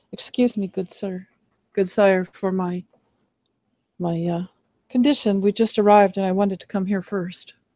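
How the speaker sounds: murmured words. Bowing to kiss an old man's ring, the character apologizes, murmuring. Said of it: "Mercy bends over to kiss it and murmurs".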